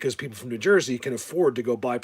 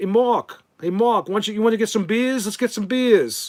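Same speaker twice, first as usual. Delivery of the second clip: put-on New York Long Island accent; 10 semitones higher, 7 dB louder than usual. Speaker recalls weekends on Long Island, mimicking the locals in a loud Long Island accent. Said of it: "they all talk like this, and they're all loud".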